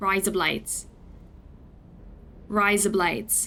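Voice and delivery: put-on Australian accent. Trying out a phrase, Australian accent. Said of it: "try in an Aussie accent".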